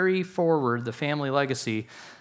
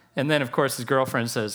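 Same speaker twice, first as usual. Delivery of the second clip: plain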